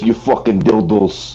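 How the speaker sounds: put-on Swiss German accent. Arguing with friends over how an accent sounds, doing a Swiss guard accent. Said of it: "Swiss guard sounds like this".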